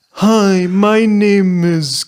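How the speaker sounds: very loud, high, dragged-out half-speed playback. Joking about a podcast, mimicking its intro at half speed. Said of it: "listen to it on 0.5 speed".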